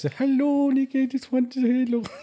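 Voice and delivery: European grandma voice. Imitating her grandma's phone message, typical european grandma voice. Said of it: "the typical European grandma voice".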